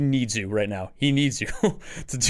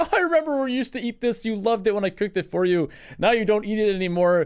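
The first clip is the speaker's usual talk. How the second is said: high, guilt-tripping, passive-aggressive grandma voice; 9 semitones higher than usual. Retelling a grandma's comments about home cooking: imitating a passive-aggressive grandma. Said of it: "like, passive grandma thing".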